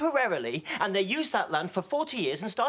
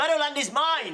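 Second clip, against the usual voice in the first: stubborn, insistent, high-pitched shouted delivery; 7 semitones higher, 4 dB louder than usual. Quarrelling back and forth over who owns the meadow: yelling. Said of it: "What are you both yelling for?".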